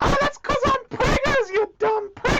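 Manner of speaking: high, squeaky mouse voice. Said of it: "You sound like a talking mouse".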